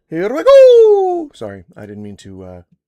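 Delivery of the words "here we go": very high, loud cry with drawn-out go. Kicking things off with a sudden, jump-scare Mario voice. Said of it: "with the Mario voice".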